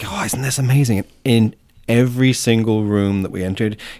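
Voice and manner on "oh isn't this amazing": imitated hushed whisper. Retelling showing him around the art, retelling a whisper in his ear. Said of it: "I just kind of whispered in his ear".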